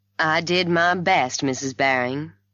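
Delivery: ordinary delivery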